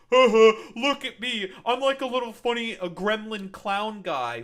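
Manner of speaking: shrill, very high, loud gloating crow. Imitating soldiers wearing underwear on their heads: mocking imitation of proud soldiers. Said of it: "being like".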